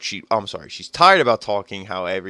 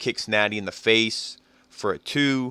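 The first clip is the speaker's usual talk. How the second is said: ordinary talk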